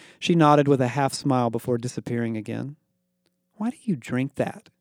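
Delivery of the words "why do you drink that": scornful sneer, quieter. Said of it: "Becky sneered".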